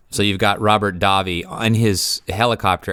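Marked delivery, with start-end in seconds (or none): none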